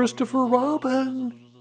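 loud, high-pitched stage whisper. A storyteller reads a character calling down from a tree, in a loud whisper. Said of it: "he said in a loud whisper".

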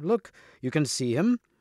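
ordinary delivery, nothing marked

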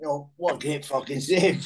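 put-on Scottish accent. Retelling what was said to the keeper after a great save: put-on scottish accent. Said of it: "in his best Scottish accent".

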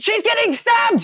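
shrill, very high, loud screaming. Narrating a character dashing back inside during a game, screaming. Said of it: "screaming the whole time".

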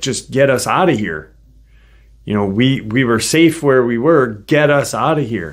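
plain

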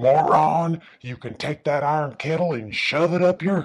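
high, croaking, last-breath dying voice. Retelling a man's last words on his deathbed, imitating a croaking last breath. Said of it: "he croaked his last breath".

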